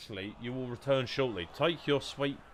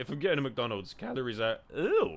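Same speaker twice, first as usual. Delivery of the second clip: voice snapping and breaking mid-phrase. Arguing about McDonald's calories, voice cracking. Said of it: "Little voice crack from the boy".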